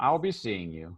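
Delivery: fond, amused voice with a chuckle. Voicing a father who chuckles at his son: chuckling father. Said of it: "his father, he kinda chuckles".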